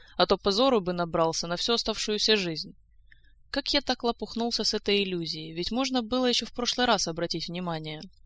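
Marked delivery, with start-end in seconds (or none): none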